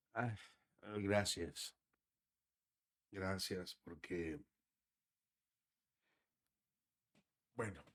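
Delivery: choked up, too moved to speak. Thanking the other speaker for kind words, choked up, can't speak. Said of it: "no puedo hablar. Perdón".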